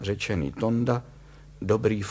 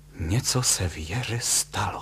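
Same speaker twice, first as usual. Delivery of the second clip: slow, hushed voice, close to tears; 2 semitones lower than usual. A wife reacts to an ominous telegram, half-whispering. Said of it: "zašeptala".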